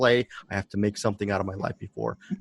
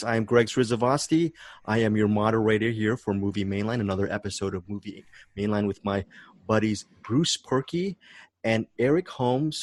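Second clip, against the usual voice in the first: ordinary talk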